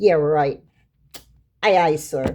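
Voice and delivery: heavy, grudging, put-upon sarcasm. Acting out a husband's answer after being told to take out the trash: sarcastic reply. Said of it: "Like sarcastically saying".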